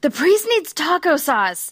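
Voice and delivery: mock frantic, very panicked, loud, high cry. Retelling a sleeptalker's words, imitating a panicked shout. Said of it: "he sounds very, very panicked".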